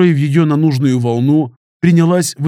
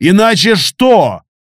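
loud, high-pitched shouted yell; 5 semitones higher, 4 dB louder than usual. Narrator as the hero answers a girl aiming a pistol at him, yelled back. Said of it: "заорал я в ответ".

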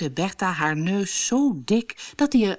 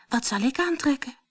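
timid, bashful, very shy, pitched up; 6 semitones higher than usual. Narrator reading a story; the stepdaughter asks her stepmother's family, very shy. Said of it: "Vroeg ze heel verlegen".

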